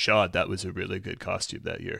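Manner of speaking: lowest-range, soft, creaky, rough voice. Talking with friends about a Bob's Burgers costume, low-register H. John Benjamin impression. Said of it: "Here's my H. John Benjamin impression".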